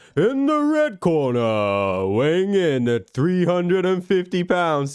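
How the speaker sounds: slow, swooping boxing ring announcer call. Showing how an announcer would sound: ring announcer voice. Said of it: "an announcer or something".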